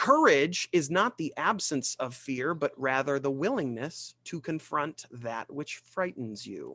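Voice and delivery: ordinary talk, nothing marked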